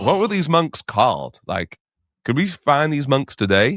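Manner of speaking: put-on convincing American accent. Speaker retelling a person's reply about the monks, American accent. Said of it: "a good American accent".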